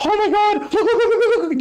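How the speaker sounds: play-acted very high, frantic, excited urgent screaming. Retelling the other speaker's text messages: imitating someone screaming. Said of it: "screaming at me through text messages".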